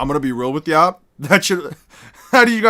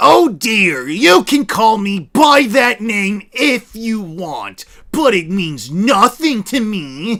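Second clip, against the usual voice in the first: grating, irritating, high, silly put-on voice; 5 semitones higher than usual. Redoing a Naruto line to make it sound less cool; really annoying voice. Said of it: "a really annoying fucking uh fucking voice".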